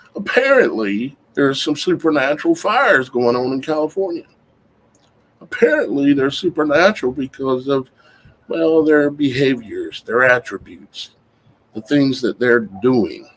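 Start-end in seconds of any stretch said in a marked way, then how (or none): 0.1-4.2 lightly sarcastic, swooping delivery. Introducing a topic after warning of sarcasm: sarcastic. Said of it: "I'm gonna use a little sarcasm here".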